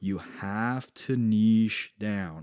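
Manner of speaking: very slow, deliberate, word-by-word delivery. Stating the most missed point for new entrepreneurs: very slow delivery. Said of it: "I'm going to say it very slowly".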